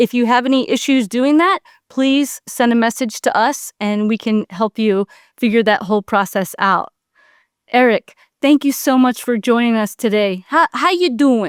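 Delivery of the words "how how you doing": tough Philadelphia accent. A host greets guest Eric in a Rocky impression. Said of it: "That's my Rocky impression".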